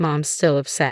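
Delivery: ordinary delivery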